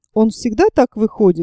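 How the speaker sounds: ordinary delivery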